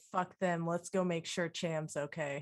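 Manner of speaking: low, muttered aside under the breath. Speaking in character to a companion so others can't hear: said under one's breath. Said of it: "under my breath to her".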